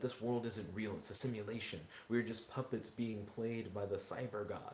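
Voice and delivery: ordinary talk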